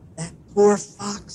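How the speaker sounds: whispering. Dr. DeSoto turns to his wife after the fox begs for mercy, whispering. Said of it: "he whispered to his wife".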